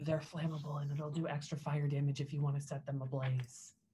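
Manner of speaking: hushed, secretive half-whispered aside. Telling a party member a tip mid-fight in character: half-whispering. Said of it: "I'm gonna whisper".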